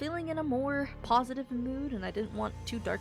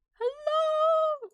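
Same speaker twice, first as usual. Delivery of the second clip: very high-pitched, much higher and louder; 8 dB louder than usual. Streamer back after five days greets viewers with a high-pitched greeting. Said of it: "I did that so high pitched".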